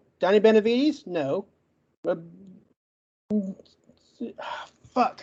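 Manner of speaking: stuttering, getting stuck on a word. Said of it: "I knew I'd get stuck on this one".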